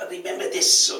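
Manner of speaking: very high, attempted put-on Scottish accent. Retelling what a manager told him: imitating a Scottish accent. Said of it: "I can't take off Scottish accent".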